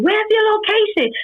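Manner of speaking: panicked, frantic, very high-pitched screaming. Speaker recounting a phone call from their cousin, retelling cousin's screaming. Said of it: "She's screaming".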